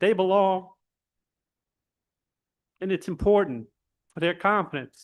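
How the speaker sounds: heartfelt, moved voice with feelings welling up. Speaking up for keeping the school in Jefferson Parish, getting emotional. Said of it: "I don't know why I'm getting emotional".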